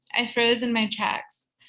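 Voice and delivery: plain reading voice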